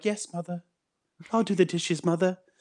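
put-on high, dutiful, obedient middle-class kid voice. Mocking middle-class kids who act tough, imitating one at home. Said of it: "you put on a fucking polo shirt and you're like".

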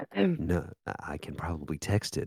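soft, hushed whisper under the breath. Answering the other speaker about sharing something from an illegal site, whispering. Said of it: "Why are we whispering?".

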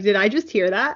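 ordinary talk, nothing marked

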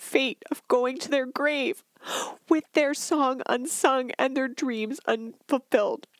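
tearful, crying voice. Telling how someone died with her dream unsung: crying while talking. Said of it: "I'm crying now".

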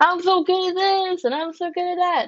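high, loud, showy, fancy-prancy boastful voice. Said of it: "with all of their fancy prancy".

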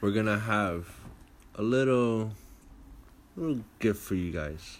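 creepy, unsettling, sinister tone. Signing off an episode to the listeners, in a creepy tone. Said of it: "He's saying that in a creepy tone".

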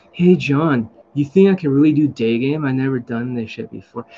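super chill, totally relaxed, laid-back voice. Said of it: "He talked like this".

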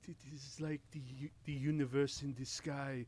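slow, deliberate documentary narrator voice. Answering a call for the best impression: Werner Herzog impression. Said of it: "best Werner Herzog impression".

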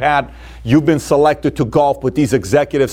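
ordinary delivery

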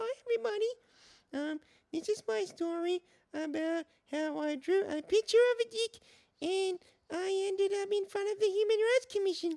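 very high-pitched, small voice. Opening the show with its first character: Little Timmy voice. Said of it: "my show starts with a guy called Little Timmy".

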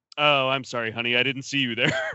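cold, flat, empty, emotionless deadpan delivery. Retelling how a man looks down at the fallen woman and speaks, with no emotion. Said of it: "with no emotion".

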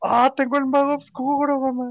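high, drawn-out acted yell of pure excitement. Retelling shouting the news to mom: imitating excited shouting. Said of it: "salí gritando de la emoción".

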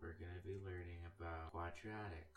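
quiet, flat, droning monotone. Speaker imitates a former teacher introducing a lesson, imitating monotone teacher. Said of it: "he had you, a monotone voice".

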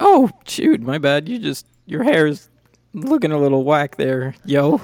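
put-on slangy, high, swooping teenage voice. Voicing the teenager at the counter answering the players: voicing a teenage clerk. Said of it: "the guy, he's like".

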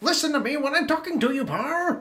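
very high scolding tone. Quoting a boss yelling at Parr, the speaker does a Wallace Shawn impression. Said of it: "not a bad Wallace Shawn".

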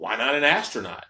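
loud, sarcastic, mocking, facetious delivery. Retelling a man's wife replying about his job interview: mock-facetious. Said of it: "just being real facetious".

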